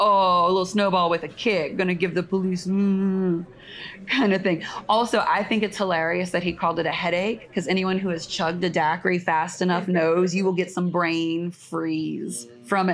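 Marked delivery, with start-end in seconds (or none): 0.0-4.4 snide, scoffing, sarcastic tone. Retelling what a man offended by the police said: imitating a sarcastic remark. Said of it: "He said sarcastically".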